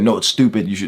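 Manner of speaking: loud shout. Retelling the brother's reaction to wanting a shield: imitating brother shouting. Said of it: "shouting and saying".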